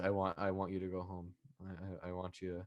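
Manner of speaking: low, flat monotone held level throughout. Recapping a wrestling segment, imitating Darby's monotone delivery. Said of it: "Darby was just fully monotone the entire time".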